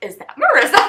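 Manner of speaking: excited, high, loud laughing surprise.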